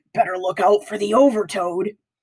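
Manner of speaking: dark, sinister, ominous, menacing whisper. Heading back to class, Ben catches up with Ryan: dark, sinister whisper. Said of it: "whispers in a dark, sinister voice".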